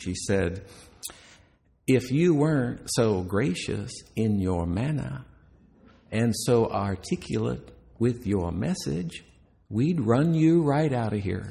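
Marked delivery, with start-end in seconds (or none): 1.9-11.5 put-on lilting, gracious, charming southern accent. Retelling what an older woman said in a receiving line, charming southern lilt. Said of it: "in a very charming southern lilt".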